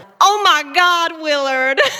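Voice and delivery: slight Southern American drawl. Asked for a bit of accent, a cast member delivers a line in a southern drawl. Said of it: "Can you give me a bit of Southern drawl?".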